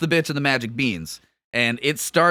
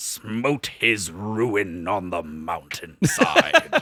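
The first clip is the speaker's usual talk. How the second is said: put-on old wizard voice, much lower pitch; 6 semitones lower than usual. Describing a fight from the story, doing his only Gandalf impression. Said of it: "the only impersonation I can do of".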